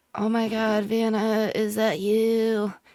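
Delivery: feeble, very weak, faint, barely-there voice. Acting out someone replying over the falling rain: very weak voice. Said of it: "You hear a very weak voice reply".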